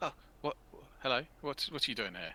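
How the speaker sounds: high, jumpy, startled, flustered babble. Voicing a cowering character who jumps when approached: startled, flustered NPC voice. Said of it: "He, like, jumps and he's like".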